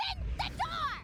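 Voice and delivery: loud yelling. Calling through a closed door, demanding it be opened: yelling. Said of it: "Stop yelling".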